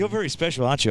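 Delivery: sarcastic put-down tone. Quoting a coach's press conference line: imitating Ross Lyon's sarcasm. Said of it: "I love his little, uh, sarcasm".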